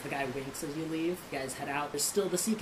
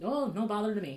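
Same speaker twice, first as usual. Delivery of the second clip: put-on everyday Irish-accented voice, pitched up; 7 semitones higher, 4 dB louder than usual. Narrating a scene, voicing a stranger the player bumps into, Irish accent. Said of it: "That sounds Irish".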